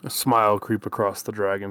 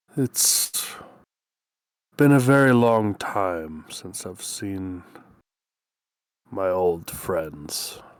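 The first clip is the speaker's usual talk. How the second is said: dragon voice on the verge of tears. Voicing a dragon who brushes away a tear: tearful dragon voice. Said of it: "brushes a tear out of his eye".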